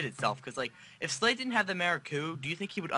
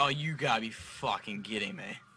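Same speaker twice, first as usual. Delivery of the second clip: put-on angry voice, lower; 4 semitones lower than usual. Retelling a character's reaction to seeing them together: imitating Slade being pissed. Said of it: "he was, like, pissed".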